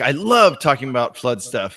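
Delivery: stress on love, stretched slow and wide.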